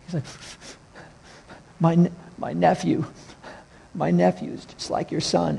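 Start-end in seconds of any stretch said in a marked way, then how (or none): 1.8-5.6 mock male sobbing, quieter. Retelling what a store employee said through tears: imitating someone bawling. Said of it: "he's bawling, crying in the store".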